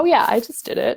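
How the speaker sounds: put-on nonchalant, offhand tone. Retelling how the husband answered about doing laundry: imitating a nonchalant reply.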